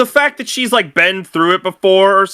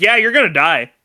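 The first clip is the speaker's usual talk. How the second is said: mock flat, emotionless monotone; 2 semitones lower than usual. Describing a movie character who shows no emotion, imitating a flat monotone. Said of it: "she is so monotone with everything".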